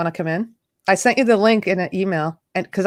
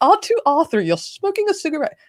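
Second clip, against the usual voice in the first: attempted British accent, pitched up; 8 semitones higher than usual. Joking about a smoking robot, asking how the accent sounds: put-on british accent. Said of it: "how am I doing on the accent?".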